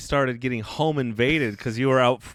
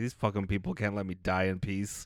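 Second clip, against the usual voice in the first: pretend quiet fuming, lower and quieter; 4 semitones lower, 9 dB quieter than usual. Acting out dying in a crashing plane among screamers: mock quiet seething annoyance. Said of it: "I'd just be smoldering".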